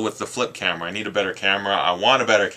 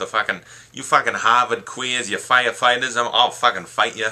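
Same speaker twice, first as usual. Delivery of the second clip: mock, put-on Boston accent; 2 semitones higher than usual. A Canadian talking about loving Boston, doing a mock Boston accent. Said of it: "Something about the Boston accent".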